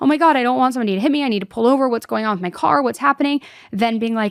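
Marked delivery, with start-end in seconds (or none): 0.0-3.4 frantic, alarmed rambling, rattled off in panic. Imagining a sixteen-year-old's words as her car stalls: imitating someone panicking. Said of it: "she's panicking at sixteen years old".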